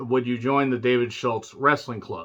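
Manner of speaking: ordinary talk, nothing marked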